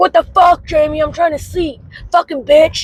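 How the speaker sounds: mock furious, high, screamed cursing rant. Retelling how he woke up over the kids' noise: imitating someone screaming and cussing. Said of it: "start screaming and cussing".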